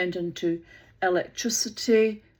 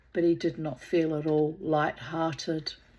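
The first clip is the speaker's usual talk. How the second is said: usual speaking voice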